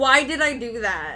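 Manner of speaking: frustrated, angry at oneself. Reacting after stepping off the gravity floor: angry at oneself. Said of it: "I'm so angry".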